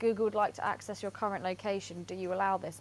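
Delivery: ordinary talk, nothing marked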